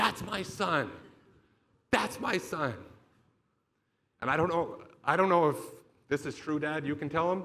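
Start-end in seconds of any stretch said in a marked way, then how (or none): 0.0-2.7 put-on yelling in a higher voice. Retelling parents in the crowd: imitating parents yelling. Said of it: "my mom and dad are yelling".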